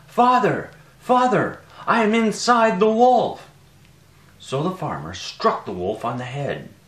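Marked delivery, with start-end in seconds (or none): 0.2-3.5 very high, very loud, slow calling out. A boy calling out to his father, calling out. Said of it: "amazed to hear Tom calling out".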